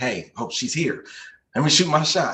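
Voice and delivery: put-on stuttering speech. Retelling how they spoke before trying their shot: imitating own past stuttering. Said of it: "I was stuttering like".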